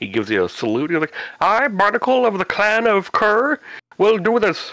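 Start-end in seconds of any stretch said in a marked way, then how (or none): 1.4-4.7 pitch raised way up and dragged out. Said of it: "it sounds like Kermit the Frog".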